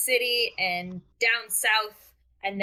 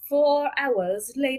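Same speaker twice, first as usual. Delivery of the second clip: put-on French accent in narrator style; 4 semitones higher than usual. Announcing a time skip in a game: SpongeBob French narrator voice. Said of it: "I was trying to do a SpongeBob voice".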